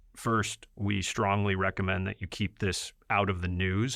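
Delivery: ordinary talk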